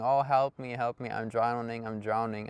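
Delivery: normal talking voice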